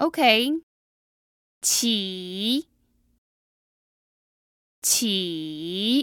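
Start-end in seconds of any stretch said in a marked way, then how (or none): 1.6-6.0 Mandarin falling-rising third tone on qi. Pronouncing a chinese word for listeners to identify its tone: mandarin third tone. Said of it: "That was the third tone, falling rising".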